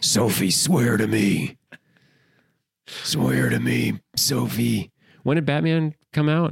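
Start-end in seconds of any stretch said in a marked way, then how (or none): 0.0-4.9 ground out rough and slow. Quoting a movie line in a Batman voice. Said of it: "busts out the Batman voice".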